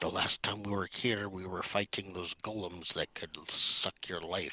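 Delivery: very quiet whisper. Warning the rest of the party in character: very quiet whisper. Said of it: "Very quietly whisper to the rest of the party".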